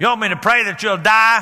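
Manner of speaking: acted-out annoyed, fed-up, irritated retort. Retelling what he said, looking a man straight in the eye, imitating an irritated retort. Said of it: "Just about with that tone of voice".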